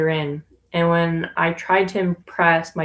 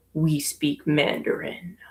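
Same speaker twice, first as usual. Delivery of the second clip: put-on stern voice, quieter; 4 dB quieter than usual. Retelling a great uncle's reply after a greeting: imitating stern great uncle. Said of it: "I've never seen him so stern".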